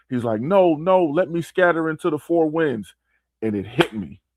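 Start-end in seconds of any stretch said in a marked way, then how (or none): 0.4-2.9 yelling in a high pitch. Retelling a movie scene where the lion yells: imitating the lion yelling. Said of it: "he yells out".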